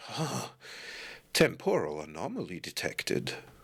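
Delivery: put-on slow voice of an aging older man. Voicing a being that speaks as an older man: older man's voice. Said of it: "which sounds like a, an, uh, older man".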